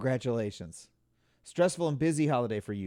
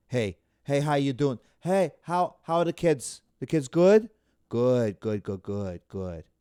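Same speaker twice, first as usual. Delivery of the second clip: Long Island woman's accent, voice dropped down; 4 dB louder than usual. Describing women from Long Island, imitating their small talk in a low-voiced Long Island accent. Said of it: "But they got low voices. They're down here".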